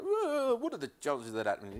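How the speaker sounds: put-on comic voice, pitch swooping all over. Talking with his dad, he does a Harry Hill impression. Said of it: "I have to do Harry Hill. I go".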